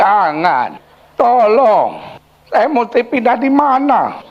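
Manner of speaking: put-on high, swooping elderly grandfather voice. Retelling an old man's reply after the speaker ordered him out: old grandpa voice. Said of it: "suara kakek-kakek".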